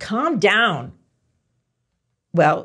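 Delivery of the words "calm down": loud, commanding, demanding tone. Demonstrating how a phrase sounds when used as a demand, demanding. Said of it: "what if I demand that you calm down?".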